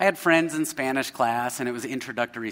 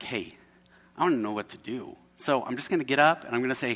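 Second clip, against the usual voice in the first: put-on whispering. Retelling whispering to a friend during class: retelling a whisper. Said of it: "So I'm whispering to my friend".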